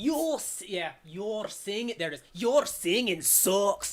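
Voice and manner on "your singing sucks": put-on scary, frightening voice. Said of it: "he's like a Scottish accent".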